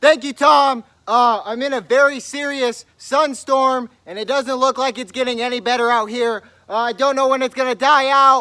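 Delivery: very loud, high-pitched shouting. Playing a field reporter answering the anchor in a comedy bit, yelling. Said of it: "Johnson, why are you yelling?".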